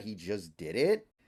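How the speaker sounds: ordinary talk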